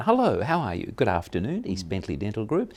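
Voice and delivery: smiling, sing-song, cheerful voice. Showing how to answer a practice phone well: smile in the voice. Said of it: "answer the phone with a smile on their voice".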